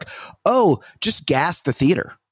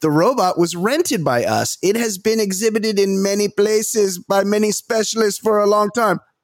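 put-on, pitched-up Russian accent; 6 semitones higher than usual. Reading out a Russian official's statement about the robot: Russian accent. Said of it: "That's my Russian".

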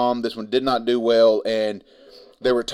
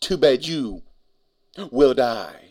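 acted, slow, cheesy, awful movie-style line reading. Retelling a movie scene, quoting the actress playing Mileena: Mileena's cheesy line delivery. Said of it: "In that exact cadence".

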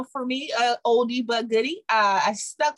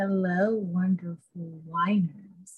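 low, sultry put-on sexy voice; 5 semitones lower, 4 dB quieter than usual. Opening a wine chat by greeting viewers, in a put-on sexy voice. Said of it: "In my sexy voice".

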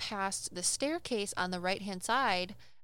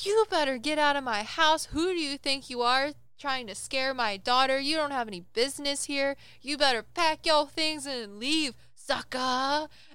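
loud, high-pitched yelling; 5 semitones higher, 6 dB louder than usual. Retelling how your mother yelled at a ghost over speakerphone, acting out the yell. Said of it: "yelling at this ghost".

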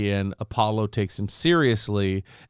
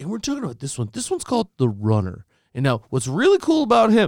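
awkward, very high, swooping forced presenter enthusiasm; 10 semitones higher, 4 dB louder than usual. Mocking video game producers talking to a crowd on camera, imitating forced-excited game producer. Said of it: "do I sound like that guy already?".

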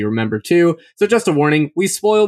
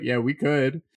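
mock flat, unexcited tone, quieter; 9 dB quieter than usual. Imitating another speaker's reply about hats: imitating an unexcited reply. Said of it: "That's like".

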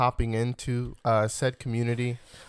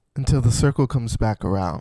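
calm public-radio host voice, raised; 6 dB louder than usual. Signing off the show to listeners, in an NPR voice. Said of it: "That was like the NPR voice".

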